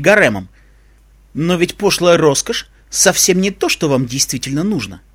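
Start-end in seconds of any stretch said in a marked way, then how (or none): none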